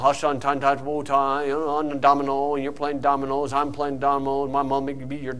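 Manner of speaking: low, dull, droning monotone delivery. Preaching about boring churches, imitating a dull preacher, in a monotone. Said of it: "it's real monotone".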